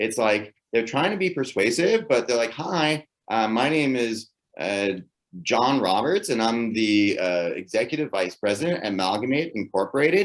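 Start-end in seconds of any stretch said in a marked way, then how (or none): 2.5-10.3 uptalk, each phrase rising at the end. Showing an irritating way people talk when trying to be persuasive, demonstrating up talk. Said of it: "this is called up talk".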